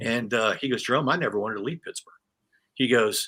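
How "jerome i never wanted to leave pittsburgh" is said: plain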